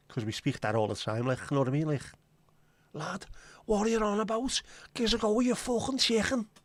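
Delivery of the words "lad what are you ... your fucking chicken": very high Scouse accent with Dutch-sounding ch. Showing how Scousers can sound Dutch, in a Scouse accent that sounds Dutch. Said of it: "you sound very Dutch".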